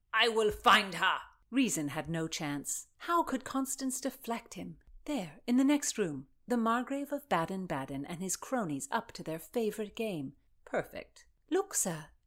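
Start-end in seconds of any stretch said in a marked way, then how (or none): 0.1-1.1 raised, loud shouting. A man jumps to his feet and answers, shouting. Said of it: "he shouted".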